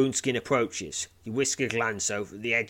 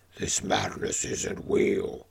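snarling ogre voice, lower; 2 semitones lower than usual. Narrating a story, the reader voices the immortal ogre Woundskin snarling. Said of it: "he snarls".

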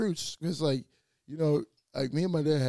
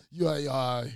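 ordinary delivery

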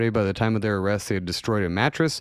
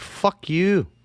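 put-on Scottish accent, pitched up; 9 semitones higher than usual. Speaker voices a man who took it all the way to court, in a Scottish accent. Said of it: "that was more of a Scottish accent".

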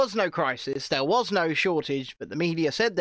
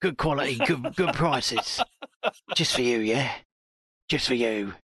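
shady, dodgy dealer voice, much lower; 6 semitones lower than usual. Retelling what someone offered, like one of those dodgy deals, in a shady dealer voice. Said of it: "it sounded like one of those dodgy deals".

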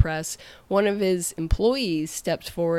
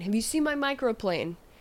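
play-acted chef voice, yelling down the line; 5 semitones higher, 3 dB quieter than usual. Retelling the chef calling down the line: imitating the chef yelling. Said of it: "he yells down line".

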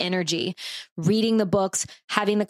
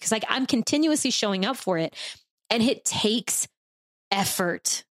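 tearful, voice cracking with emotion; 2 semitones higher than usual. A speaker, mid-thought, getting teary. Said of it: "now I'm getting teary".

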